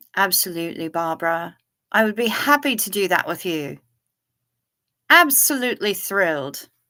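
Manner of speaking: put-on English accent. Answering a request to pretend to be English, in a put-on English accent. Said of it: "pretend they're English and use English accents".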